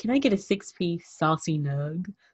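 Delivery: slow, sultry, sexy, seductive voice. Showing how an adult should order a six-piece saucy nug, sexy voice. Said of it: "You got to sound like, sexy with it".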